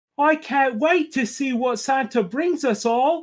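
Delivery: spoken very high and slow. Reading a Christmas story aloud, doing the lines in a Peppa Pig voice. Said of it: "my best Peppa Pig voice".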